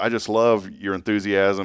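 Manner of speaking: ordinary talk, nothing marked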